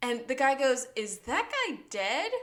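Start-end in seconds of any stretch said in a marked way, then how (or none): 1.0-2.3 put-on unbothered tone, higher. Retelling a scene where a guy asks about a body: imitating someone super unbothered. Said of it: "super unbothered".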